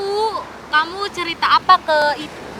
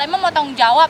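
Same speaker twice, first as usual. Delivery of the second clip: ordinary delivery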